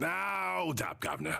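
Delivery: coarse voice. During a group game, an unseen voice calls out to the players, in a coarse voice. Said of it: "a voice that coarse".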